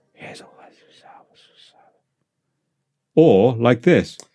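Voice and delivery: hushed whisper. Speaker shows how they had to whisper in a game role: whispering. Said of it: "I had to whisper like like this".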